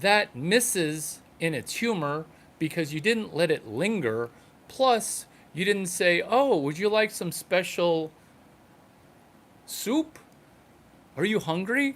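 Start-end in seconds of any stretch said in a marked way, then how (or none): 6.6-12.0 imitated Chinese accent. Critiquing someone's joke, showing how it should go in a chinese accent. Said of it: "delivered in a Chinese accent".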